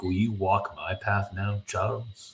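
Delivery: ordinary delivery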